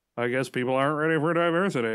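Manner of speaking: false, play-acted delivery. Speaker voices what another man is saying, putting on an insincere tone. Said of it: "that didn't sound genuine at all when I said it like that".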